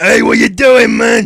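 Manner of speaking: very loud, slow, booming brute goblin yell. Retelling being cut up while driving: imitating a brute goblin voice. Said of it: "I suddenly turn into, you know, brutes".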